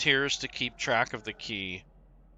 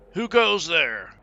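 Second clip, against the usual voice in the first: raised, pitched-up night-watch guard call; 5 semitones higher than usual. Voicing guards on nightly rounds calling down the alley: guards yelling. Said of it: "they're yelling down".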